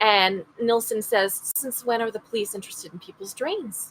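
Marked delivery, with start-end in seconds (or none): 1.6-3.9 put-on very calm, soft Scottish accent. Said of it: "in his very calm Scottish way".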